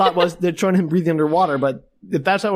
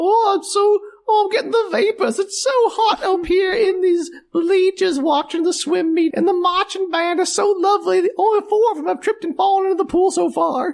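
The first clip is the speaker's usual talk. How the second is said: very high put-on elderly lady voice; 14 semitones higher than usual. In a scene, the speaker plays a woman watching a swim meet, in an old lady voice. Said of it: "I was going for an old lady".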